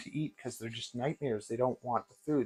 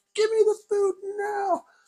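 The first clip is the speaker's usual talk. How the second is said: very high, greedy, eager snake voice, raised volume; 7 dB louder than usual. Describing snakes at feeding time, the speaker voices one: imitating a food-excited snake. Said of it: "They get really food excited".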